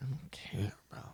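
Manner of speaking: whispered.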